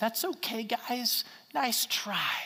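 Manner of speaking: kind, easy, very gentle and mild voice. Acting out the response one would expect from Jesus: very gentle voice. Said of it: "in a very gentle voice".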